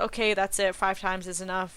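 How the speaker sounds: ordinary delivery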